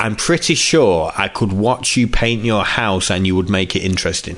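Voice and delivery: plain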